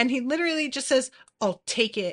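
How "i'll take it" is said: curt, exasperated, annoyed and dismissive tone. Retelling a character's reply at a front desk: imitating an annoyed dismissive tone. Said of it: "in, like, a "shut the fuck up, will you?" kind of tone".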